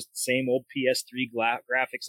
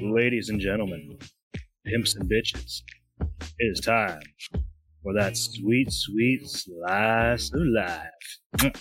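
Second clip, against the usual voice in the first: seductive, sultry, sexy voice; 3 semitones lower than usual. Introducing the weekend segment on the podcast when told to take it away: sexy voice. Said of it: "That was fucking sexy".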